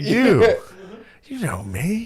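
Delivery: slow, swooping, drawn-out politician voice, pitched way up. Retelling Biden talking to the camera in a tough moment: imitating Biden. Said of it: "he's like".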